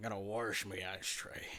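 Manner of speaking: put-on pirate voice. Answering a request to try it, in a pirate accent. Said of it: "A pirate accent talking about washing your ashtray?".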